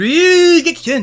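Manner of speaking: put-on high, old-style fighting-game battle-cry shout. Showing how the character used to call out the move: imitating Robert's old Ryugekiken shout. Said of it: "He doesn't say it like".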